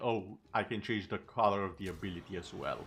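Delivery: ordinary delivery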